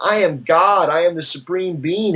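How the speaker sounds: put-on man's voice, ecstatic proclaiming yell. Telling a story of a man running down the street, imitating his yell. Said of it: "he's running down the street yelling".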